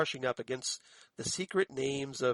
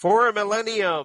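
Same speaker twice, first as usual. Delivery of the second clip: bellowed, very loud, high-pitched narration; 6 semitones higher, 10 dB louder than usual. Quoting an opening narration, doing it like David Lynch. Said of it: "I guess I should do it like Lynch".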